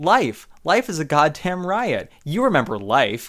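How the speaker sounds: dreamy, spaced-out, faraway, spacey delivery. Quoting Harold's stoned reply from the film: imitating a very high-pitched spacey tone. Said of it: "in this very high pitch, like, spacey tone".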